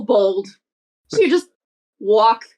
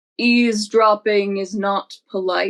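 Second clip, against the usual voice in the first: voice dropped right down, very low and deep. The narrator voices Miss Franny addressing an eavesdropper, in a very low voice. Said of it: "In a very low voice, you hear Miss Franny go".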